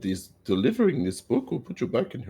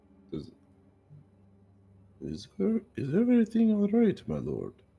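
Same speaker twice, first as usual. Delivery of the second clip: whispering, higher pitch; 9 semitones higher than usual. Playing a character who leans in to ask a lord: whispering. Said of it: "lean in to whisper to him".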